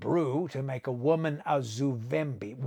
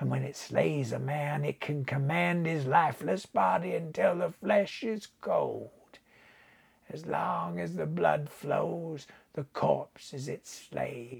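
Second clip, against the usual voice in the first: put-on mellow, rich, senile old man voice; 2 semitones higher, 4 dB quieter than usual. Narrating an old voodoo man describing a Zuvembi to Buckner, mellow, rich old man's voice. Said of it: "But the old man's head was sunk on his withered breast, ... It was as if the name penetrated the fogs of senility that clouded the voodoo man's mind. ... and his voice was mellow and rich".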